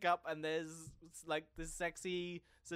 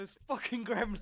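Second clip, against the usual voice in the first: mock outraged, pretend angry voice, higher; 4 semitones higher, 4 dB louder than usual. Role-playing an audience member troubled by the gremlins: mock outraged audience member. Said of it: "you're supposed to be very emotional".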